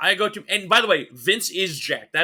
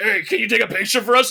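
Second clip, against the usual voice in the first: put-on growling voice; 5 semitones higher, 4 dB louder than usual. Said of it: "the [name] growl is real".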